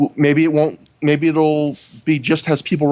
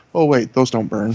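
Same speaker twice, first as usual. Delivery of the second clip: mock under-breath mutter, much lower; 4 semitones lower than usual. Retelling how Gabe caught himself, imitating a muttered aside. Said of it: "under his breath almost".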